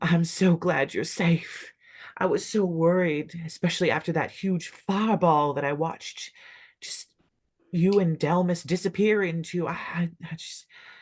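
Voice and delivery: bawling, high-pitched, tearful sobbing with relief.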